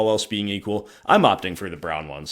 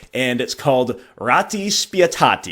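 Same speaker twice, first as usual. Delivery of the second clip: barely-there, pitched-up put-on Italian accent; 4 semitones higher, 4 dB louder than usual. Naming a promo version, speaker tries a barely-there Italian accent. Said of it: "Sorry for the non-existent Italian accent".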